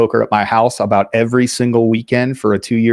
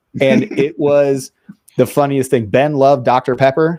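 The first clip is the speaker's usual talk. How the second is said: ordinary talk, nothing marked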